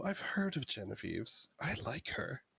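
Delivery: soft, confiding, leaning-in whisper. In a role-play scene, Zaranova leans over to speak, Zaranova whispering. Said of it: "just kind of whisper".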